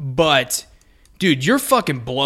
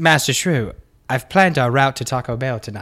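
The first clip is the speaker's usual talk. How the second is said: put-on voice of a talking car. Joking about the car planning the route: Tesla car voice. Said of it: "He goes".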